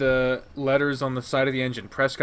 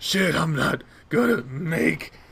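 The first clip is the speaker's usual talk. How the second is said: hoarse, rasping, ragged voice; 4 semitones higher than usual. Narrator reading Carl calling after the narrator, in a hoarse, ragged voice. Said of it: "in a hoarse, ragged voice".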